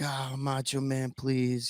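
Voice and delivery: slow, frightened, scared pleading tone. In an interview, a guest recalls a tense moment, retelling scared pleading. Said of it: "I was so scared".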